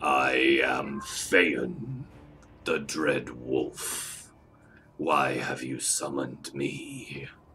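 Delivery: deep, low, rough, gravelly growling voice. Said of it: "In a growling, gravelly voice".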